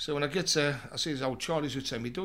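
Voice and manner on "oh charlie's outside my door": ordinary talk, nothing marked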